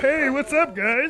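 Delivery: frog puppet voice, pitched very high. Answering the question put to him, speaking in a Kermit the Frog voice. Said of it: "Kermit the Frog decided to stop by and go".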